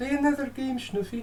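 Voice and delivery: very high, clumsy put-on woman's voice. Voicing a line during a chess game; put-on female voice. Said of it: "You have to say it with the kind of female voice".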